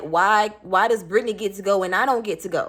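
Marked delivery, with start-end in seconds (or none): none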